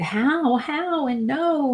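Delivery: put-on broken, tearful, high, slow weeping. Recounting being told someone was not alive, reenacting own weeping. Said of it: "I just started weeping".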